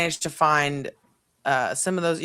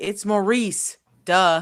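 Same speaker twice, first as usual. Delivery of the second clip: squeaky little critter voice, squeaked out; 3 semitones higher than usual. Explaining what the others hear the squeaking Maurice say, voicing Maurice. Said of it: "And you hear him say".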